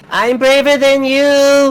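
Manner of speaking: put-on girl's voice yelling. Voicing a girl who runs after the boys and yells back, girl yelling. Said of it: "she just yells off like".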